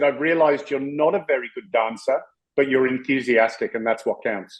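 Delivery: ordinary delivery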